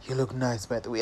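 very low, soft baritone voice. Retelling what a bouncer said at a restaurant: imitating a very low baritone. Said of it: "this very low baritone".

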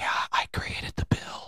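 very quiet, hushed, breathy whispered delivery. Imitating how a man the speaker can't stand whispered when he spoke: whispered. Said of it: "he whispered like this".

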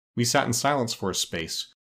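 ordinary talk

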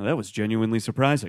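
put-on flat emotionless voice, no excitement or disappointment. Retelling a moviegoer's one-sentence review as the credits rolled: imitating a flat emotionless voice. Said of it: "No excitement in his voice, no disappointment in his voice".

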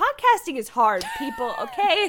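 loud, high, mock dramatic declaiming delivery.

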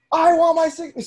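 loud, high-pitched yell. Retelling a video of a lady at a lake: imitating someone yelling. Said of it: "she's sitting there yelling".

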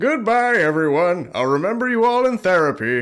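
high-pitched cartoon-character voice. Performing a requested quote on the spot: Plankton voice. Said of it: "Plankton I do".

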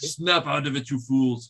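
clumsy, terrible, fake Russian accent. Repeating an earlier line to the group: terrible Russian accent. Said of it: "Terrible Russian accent".

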